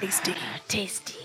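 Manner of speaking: very hushed, breathy, whispered growling creature voice. Voicing a creature that drops into the middle of the group: growling creature voice. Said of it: "as it growls".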